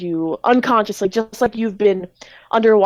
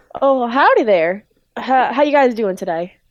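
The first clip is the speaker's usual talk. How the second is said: put-on Southern US accent; 3 semitones higher than usual. Speaker retells Speed greeting everyone, in Speed's southern accent. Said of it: "I know he had a southern accent".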